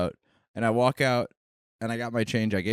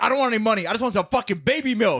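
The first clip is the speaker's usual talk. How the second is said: put-on shrill, high, aggressive scream; 11 semitones higher than usual. Retelling what an aggressive man in the neighborhood demands: imitating a man screaming. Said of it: "the really aggressive guy who screams at you".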